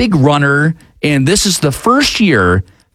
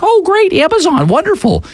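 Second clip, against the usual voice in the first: put-on voice, pitched very high. Acting out your wife's reaction when you bring in her package, imitating your own wife's voice. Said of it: "That's my wife's voice".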